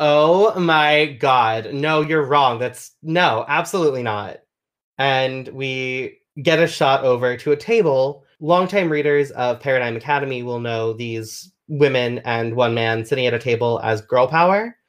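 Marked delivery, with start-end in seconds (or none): 0.0-4.4 indignant, emphatic, firm tone leaving no room to argue. Voicing a character at a table who cuts in loudly: loud voice. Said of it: "loud voice being like".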